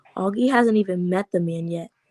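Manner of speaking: plain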